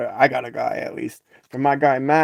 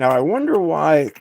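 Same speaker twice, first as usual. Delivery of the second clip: voice breaking and cracking mid-line; 2 semitones higher, 3 dB louder than usual. Talking about keys stamped Asa Abloy, voice cracking. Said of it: "my voice just broke".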